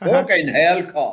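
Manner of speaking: put-on short, sudden outburst in a Yorkshire accent. Retelling the only words a man said to him, imitating Jack Turdiff's Yorkshire accent. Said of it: "And a Yorkshire accent".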